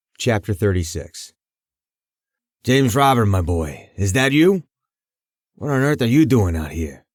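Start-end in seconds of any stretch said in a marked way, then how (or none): 2.6-7.0 put-on crackly, cracking, aged old man voice. Narrating an old man calling out to a boy in the dark: crackly old man's voice. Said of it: "The old man's voice crackled".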